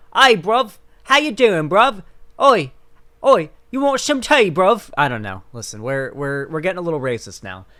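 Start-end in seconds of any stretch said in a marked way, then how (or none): 0.1-4.9 put-on London British accent, loud and high. Describing the London British accent by showing how it sounds. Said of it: "the London British accent that sounds like this".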